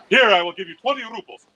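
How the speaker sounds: put-on big, full, loud voice. Telling a joke where a beggar suddenly outbids a wealthy man, big voice. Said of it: "he hears this big voice".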